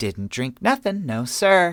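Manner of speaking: put-on tipsy giggling. Reading a story aloud, Ava answering whether she is drunk, giggling. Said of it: "she giggled".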